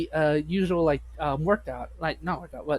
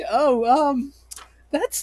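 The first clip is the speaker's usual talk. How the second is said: mock very high, distressed exclamation; 9 semitones higher, 6 dB louder than usual. Describing a mother's reaction to her child's friend, imitating her distressed voice. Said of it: "you can hear the distress in her voice".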